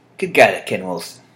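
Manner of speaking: ordinary talk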